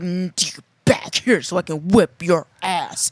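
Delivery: put-on heroic bravado. Retelling chasing someone who ran away, retelling a hero-mode threat. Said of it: "I'm just like hero mode".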